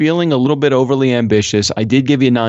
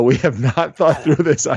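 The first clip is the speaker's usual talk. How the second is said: usual speaking voice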